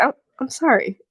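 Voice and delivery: genuinely sorry, sincere tone. Voicing a character who hears a mother is dead: genuinely sorry.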